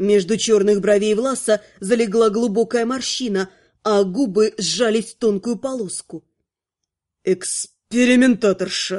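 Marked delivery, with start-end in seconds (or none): 7.2-9.0 hissing, much lower pitch. A displeased warlock looms over Lana as she comes to, hissed. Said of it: "прошипел ведьмак".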